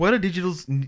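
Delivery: high-pitched, put-on New Zealand accent.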